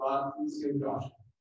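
plain, level, unfancy, flat unvaried monotone delivery. Quoting how she prayed, not fancy or passionate, flat monotone. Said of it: "she prayed in a monotone voice, like".

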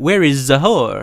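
vague foreign European accent, hard to place. Unsure how to say a player's name, trying a vague European accent. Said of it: "I don't know which European accent".

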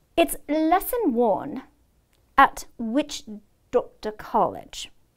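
earnest, solemn, stern lecturing tone. [name] answers Simon's question about the spell, in a serious voice. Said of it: "he said in a serious voice".

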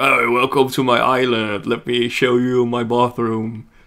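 put-on haughty voice. Teasing a companion about how they acted at first, mocking an arrogant tone. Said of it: "you were like all like arrogant".

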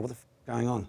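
normal talking voice

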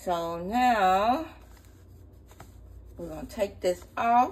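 speaking with a straw in mouth. Blending a drink while talking to viewers, talking with a straw in mouth. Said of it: "I got my straw in my mouth trying to talk".

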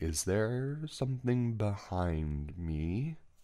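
deliberate, very slow, very quiet, hushed. Narrator, retelling his story, speaks to Marco: very slow and quiet. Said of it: "I said very slowly and very quietly".

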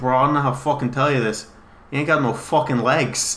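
heavy, thick, butchered, badly done Boston accent. Retelling what a best friend said in the trailer, in a thick boston accent. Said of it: "the thickest Boston accent that I will butcher".

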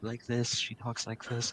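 very soft, quiet, low-pitched murmur. Showing how a friend talks: imitating a friend talking low. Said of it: "she does kinda talk low".

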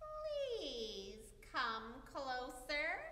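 sugary fake-nice voice, "please" drawn out. The disguised wolf invites the girl to come closer to the bed, sweetly.

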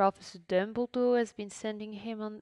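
ordinary delivery

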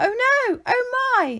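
very high, very slow, drawn-out crying exclamation. Ollie reacting after Lisimba reassures Shelly, exclaiming. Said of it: "Exclaimed Ollie".

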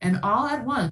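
ordinary delivery, nothing marked

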